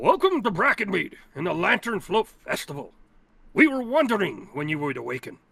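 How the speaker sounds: stately, regal elderly badger voice, swooping pitch. Storyteller voicing an old badger welcoming the group to the festival; old regal badger voice. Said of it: "you see a crowd of animal folk gathering around a old regal badger. / you see a crowd of animal folk gathering around a old regal badger. / he turns to you. / you see a crowd of animal folk gathering".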